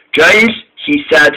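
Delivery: ordinary delivery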